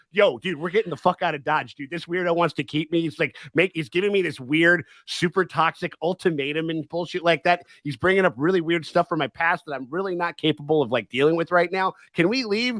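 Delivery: normal talking voice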